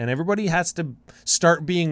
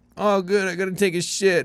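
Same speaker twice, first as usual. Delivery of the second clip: put-on drunk man voice, higher; 6 semitones higher than usual. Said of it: "That was literally his voice".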